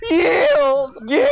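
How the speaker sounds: voice cracking. Describing offering an enemy the chance to yield, with the voice cracking. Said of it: "your voice cracks at just the right moment".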